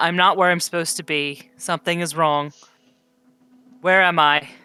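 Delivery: strong, stoic voice, slightly confused. Voicing a lost spirit asking where it is: strong, stoic, slightly confused voice. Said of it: "is still just repeating".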